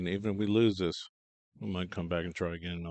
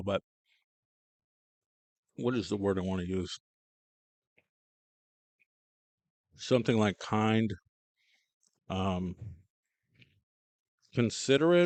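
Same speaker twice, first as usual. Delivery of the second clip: chewing while talking, mouth full; 4 dB louder than usual. Searching for the right word, talking while chewing celery. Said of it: "I'm chewing celery right now".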